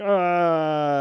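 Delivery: desperate, high, loud, drawn-out charging battle cry. Describing a fight scene where Krillin rushes Goku, imitating Krillin's battle cry. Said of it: "he sort of makes a mock cry".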